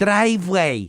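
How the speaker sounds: put-on thick Chinese accent. Imitating the driveway sensor's announcement: super thick Chinese accent. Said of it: "super thick Chinese accent".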